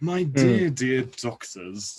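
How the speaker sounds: lordly posh drawl, deep and very slow. Showing the voice used for the Master: very posh, deeper Master voice. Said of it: "I went very posh, but a lot deeper".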